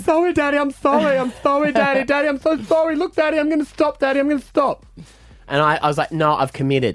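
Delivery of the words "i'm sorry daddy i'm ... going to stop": mock very high sobbing little girl voice. Father retells what his daughter kept saying to him, imitating a child crying.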